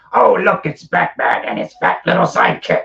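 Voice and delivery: very loud, gruff, rough, taunting pirate voice. Retelling what a man dressed as a pirate said to the speaker, imitating a pirate voice. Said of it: "He had the voice and everything".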